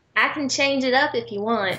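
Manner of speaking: heavy Georgia Southern accent. Offering to switch accents after another speaker hoped for one: thick Georgia accent. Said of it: "can you do the rest like that".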